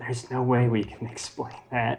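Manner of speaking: muttered whisper under breath. Playing a character who mutters to himself: whisper under his breath. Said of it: "kinda whisper under his breath".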